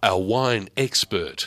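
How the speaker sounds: solemn, weighty put-on announcer voice full of gravitas. Announcing an upcoming chat with a wine expert: put-on voice with gravitas. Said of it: "See how I changed my voice for that, just to give him a little bit of gravitas".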